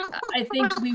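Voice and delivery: high, squeaky chipmunk voice. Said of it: "You still sound like a chipmunk".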